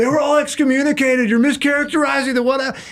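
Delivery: acted-out, very high-pitched, heated yell. Retelling an argument at a presentation, imitating someone yelling. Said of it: "yelled, like".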